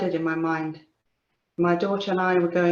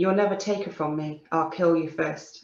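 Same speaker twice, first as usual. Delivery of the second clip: ordinary talk, nothing marked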